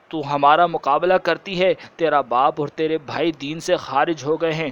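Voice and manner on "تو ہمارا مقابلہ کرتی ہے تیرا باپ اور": usual speaking voice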